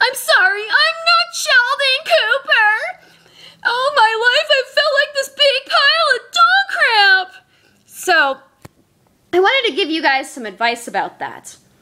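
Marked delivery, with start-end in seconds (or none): 0.0-7.5 very high, weepy, drawn-out sobbing voice. Retelling what someone said after breaking down crying: imitating someone crying. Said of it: "broke down and started crying".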